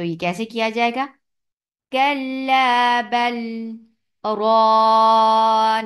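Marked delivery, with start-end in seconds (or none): 1.9-5.9 loud, then silent catch, breath held in kalla bal ran. Continuing qirat into the next verse: brief voice stop in 'kalla bal ran'. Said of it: "आवाज को बंद कर दिया गया और सांस को जारी रखा।".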